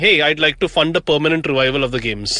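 plain

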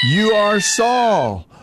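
woman screaming, shouted and drawn-out.

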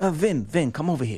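put-on lisping voice. Retelling a press dining story, imitating Jay Horwitz's lisp. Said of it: "when I do his impersonation".

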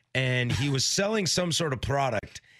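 ordinary delivery

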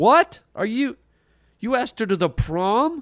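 stunned disbelief, shocked, pitched very high. [name] reacts after Brett says he asked her to the prom; shocked. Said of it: "[name]'s shock".

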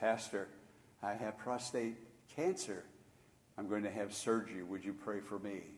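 hushed, very soft, low-voiced half-whisper. A pastor retells how men walked up to him, imitating a low half-whisper. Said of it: "whisper in a low voice".

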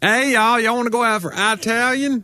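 very high, slow, overdone thick Southern drawl. Mocking what people expect to hear: exaggerated thick southern accent. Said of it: "people are disappointed that I'm not just like".

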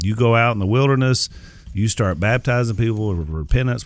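plain

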